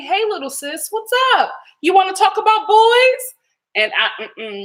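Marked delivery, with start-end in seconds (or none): 0.0-3.3 high, easy, casual, platonic brotherly tone. Retelling how he greeted her at the door: imitating a platonic brotherly greeting. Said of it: "it was very platonic".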